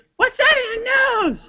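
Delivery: high, slow, suspicious voice. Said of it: "she's like".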